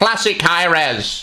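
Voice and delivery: put-on high Indian accent.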